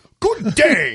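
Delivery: put-on very loud, high, old-fashioned English voice. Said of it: "Did he do it in Old English voice?".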